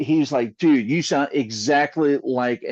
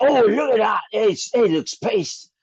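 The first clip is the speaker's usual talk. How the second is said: failed put-on Australian accent, pitched up; 9 semitones higher than usual. Attempting an Aussie accent while others say it sounds East London, bad Aussie accent. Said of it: "the best Aussie accent is like".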